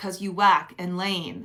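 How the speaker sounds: usual speaking voice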